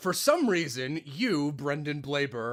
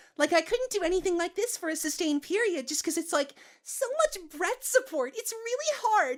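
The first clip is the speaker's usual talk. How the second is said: sustained, really high falsetto; 3 dB quieter than usual. Demonstrating a voice they find hard to sustain, in a really high falsetto voice. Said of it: "really high falsetto voice".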